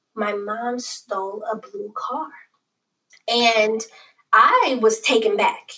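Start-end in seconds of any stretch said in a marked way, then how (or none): 0.2-2.3 barely audible, very quiet, hushed voice. Retelling what a girl said when her turn came, in a very quiet voice. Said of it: "in a very quiet voice".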